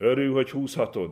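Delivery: loud, high-pitched shout, yelling. Taunting a ragged child about the sled, shouting at him even louder. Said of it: "Pali még jobban rákiáltott".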